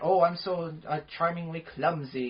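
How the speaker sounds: slow, bumbling, very British charm. Mocking clumsy romantic comedy leads: Hugh Grant impression. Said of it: "like a Hugh Grant".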